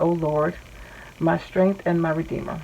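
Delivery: ordinary delivery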